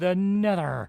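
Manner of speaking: abrupt, sudden cry, thrown up high.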